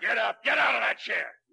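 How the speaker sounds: heavy, loud, high-pitched bellowed shouting. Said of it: "I'll be the heavy".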